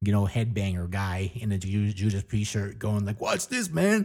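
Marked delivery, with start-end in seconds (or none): 3.2-4.1 put-on goofy, very high, childish show-off man-child voice. Picturing a childish headbanger on an escalator: imitating a childish headbanger guy. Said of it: "this just childish forty-five-year-old, headbanger guy".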